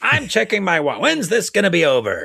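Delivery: put-on old man pirate voice. Imitating own past reaction to a monster movie: old man voice like a pirate. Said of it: "Old Man McCarty sounds a little like a pirate".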